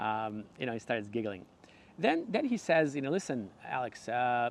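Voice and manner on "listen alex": ordinary talk, nothing marked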